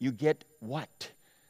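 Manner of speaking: steady, kindly, firm but caring voice. Retelling a mom answering her daughter in the car, firm but caring. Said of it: "she was firm but caring".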